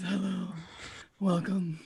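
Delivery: soft, sexy, seductive radio-host voice. After another speaker says sexy radio voice, greeting in a sexy radio voice. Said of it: "Sexy radio voice".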